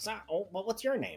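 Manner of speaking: high little voice of a small, portly gnome. Voicing a gnome who cracks the door open: little portly gnome voice. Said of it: "the gnome looks at Birchstorm and is like".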